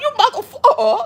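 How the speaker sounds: put-on cursing tone. Imagining the other speaker cursing a man out: imitating someone cussing a man out.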